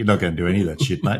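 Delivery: imitated speech with laughter while talking. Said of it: "he's just on the ground laughing".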